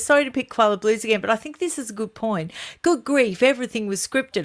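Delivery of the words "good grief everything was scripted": ordinary delivery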